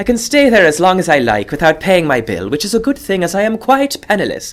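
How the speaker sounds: weird Irish-British mix accent.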